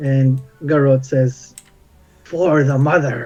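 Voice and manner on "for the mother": entranced, otherworldly, guttural, unnatural throaty voice. Voicing an entranced character who answers a question: weird guttural unnatural voice. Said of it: "speaks in this sort of weird, guttural, unnatural voice".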